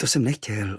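ordinary delivery

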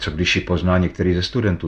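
ordinary delivery

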